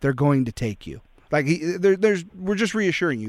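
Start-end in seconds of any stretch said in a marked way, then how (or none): 0.0-1.0 grim, dead-serious action-movie hero delivery. Quoting a line from the film Taken: Liam Neeson impression. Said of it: "It's like Liam Neeson in, uh, in Taken. He goes".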